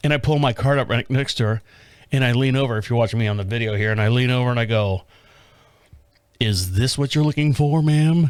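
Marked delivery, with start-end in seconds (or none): 6.4-8.3 put-on 1930s movie-style delivery. Retelling approaching a shopper, like in a 1930s movie. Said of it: "like I'm in a friggin' nineteen thirty movies".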